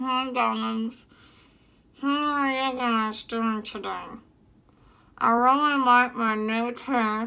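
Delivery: muffled speech, as if through false teeth. Greeting viewers while wearing fake teeth: talking with fake teeth in. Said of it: "I officially can't talk".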